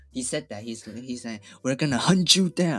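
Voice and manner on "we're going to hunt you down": very loud, booming voice. Quoting President Biden's announcement speech: deep-voiced Biden impression. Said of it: "with, like, very deep voice".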